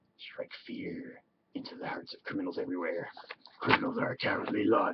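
breathy, hushed, whispered masked-superhero voice. The speaker tries out a Batman voice before moving on to other things. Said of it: "That's my Batman voice".

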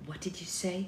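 soft, hushed half-whisper. Her mother, sweeping up beside her, questions her; half-whispered. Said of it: "Whispered her mother".

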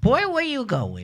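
put-on little voice, very high pitched. Remembering their grandmother, the speaker quotes her, imitating Grandma Nina's little voice. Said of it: "She had a little voice".

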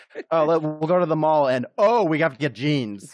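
loud, super dramatic declaiming with many "oh"s. Showing how voice dictation makes their messages sound, mock super dramatic. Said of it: "makes me sound super dramatic".

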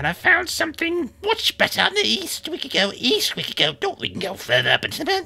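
very high, swooping, shouting skull voice. Voicing floating ram skulls arguing in a cave: yelling skull voice. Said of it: "you hear somebody yelling".

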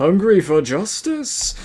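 loud, exaggerated, hammy, over-the-top silly voice. Delivering the line in an over-the-top voice. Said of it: "When I'm doing an over-the-top voice".

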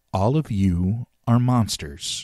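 calm, slow, unhurried delivery. A woman speaks to the children in a school, calm. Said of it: "she said calmly".

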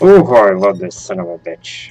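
sarcasm sounding like swooping enthusiasm. A player reaches the dreaded elevator again in a horror game, sarcastic. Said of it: "And I do mean that sarcastically".

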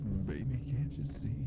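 seductive, sultry, very low voice. Showing another player how to do it sultry: sultry voice. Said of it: "you just get all sultry".

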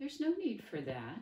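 cheery delivery. A figure in the dark addresses the children, cheerily. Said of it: "it said cheerily".

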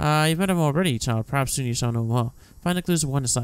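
ordinary delivery

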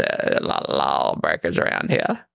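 low, calm, sultry voice. Showing the sexy version of the impression: sexy McConaughey impression. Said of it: "There's sexy McConaughey".

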